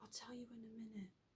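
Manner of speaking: barely audible, hushed, frightened murmur. Retelling being too scared to speak: imitating speaking really quietly. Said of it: "Really quietly".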